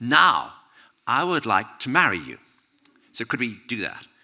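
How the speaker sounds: very loud, put-on German accent. Retelling a woman asking a writer at a party to marry her: German accent. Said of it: "German accent".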